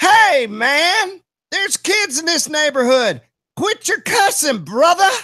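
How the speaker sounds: stern, scolding yell, very high. Retelling yelling out a window at a worker: imitating his own yell. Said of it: "I yelled".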